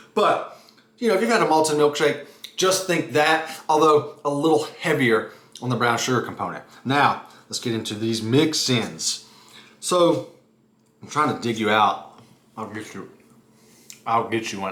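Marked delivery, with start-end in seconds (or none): 11.1-14.8 chewing with mouth full, lower pitch. Tasting a dessert on camera, digging out a mix-in for viewers: talking with mouth full. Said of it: "I gotta stop talking with my mouth full".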